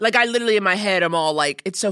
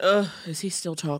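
put-on little sigh, quieter; 5 dB quieter than usual. With Mabel settled in his arms, the speaker voices her: imitating Mabel's little sigh. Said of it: "my impression of her little sigh".

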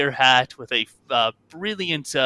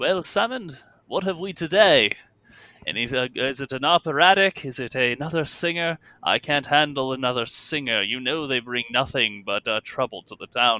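voice of an aging gentleman. Narrating a scene, voicing a man who steps through the curtains, older gentleman's voice. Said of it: "a man's voice, an older gentleman".

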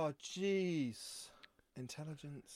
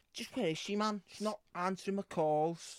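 put-on superhero voice in a broad Scouse accent; 4 semitones higher than usual. Playing a game where you spin a voice to perform, doing Scouse Batman. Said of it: "Scouse Batman".

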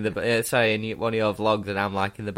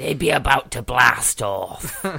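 put-on pirate voice, raised; 3 semitones higher, 5 dB louder than usual. Answering another speaker's pirate line, pirate voice. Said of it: "You know I like doing the pirate voice".

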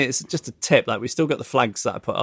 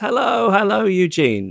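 put-on very friendly voice, pitched up; 8 semitones higher, 3 dB louder than usual. Retelling a lady greeting Eugene, who cannot place her: imitating a very friendly voice. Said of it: "in a very friendly voice".

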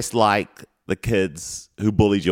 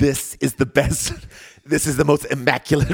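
put-on New York accent, pitched higher; 7 semitones higher than usual. Trying out an impression after talk of impressions: attempted Donald Trump impression. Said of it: "I was just gonna try and do it".

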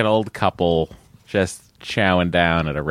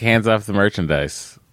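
usual speaking voice

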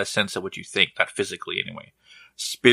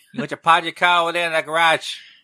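put-on Boston accent, very high-pitched; 9 semitones higher than usual. Joking about parking the car in that garage: Boston accent. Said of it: "That's my Boston accent".

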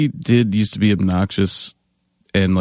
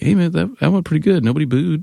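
high, upbeat, cheerful voice. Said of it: "was just like".

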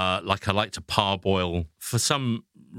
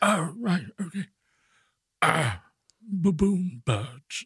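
high-pitched, slow, unhurried nature narrator voice; 9 semitones higher than usual. Acting out a narrator in a voiceover booth going mad: David Attenborough impression. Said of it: "he's in a voiceover booth".

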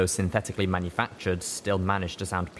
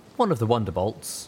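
plain reading voice

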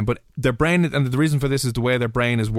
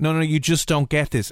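put-on pleading voice, higher; 4 semitones higher than usual. Retelling pleading with a parent over buying shoes: imitating pleading. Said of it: "begging and pleading with them".

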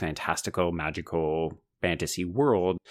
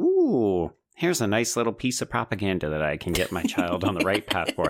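mock flippant, offhand tone. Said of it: "I'm being very flippant".

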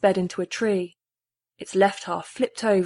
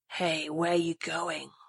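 soft, raspy, lascivious leering voice; 2 semitones lower, 8 dB quieter than usual. Reading a novel, a voice calls from a dark SUV to a walking woman: rasping, lascivious voice. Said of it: "a rasping, lascivious voice".

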